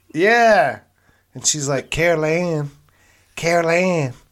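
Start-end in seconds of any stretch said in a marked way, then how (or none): 1.9-4.2 put-on weird little munchkin voice. Imitating a very short woman from a show, in a weird munchkin voice. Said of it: "she had like a weird munchkin voice".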